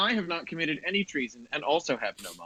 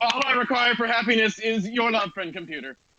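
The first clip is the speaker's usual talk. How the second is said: uncomfortably loud, flat monotone shout, pitched up; 7 semitones higher than usual. Answering friend computer during the game, uncomfortably loud monotone shout. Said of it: "shouts at an uncomfortably loud and monotone volume".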